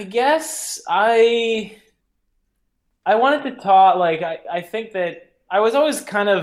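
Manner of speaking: halting stuttering false start. Asked what story the book tells about forest firefighting, the speaker answers: stuttering. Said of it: "how much I'm stuttering on it".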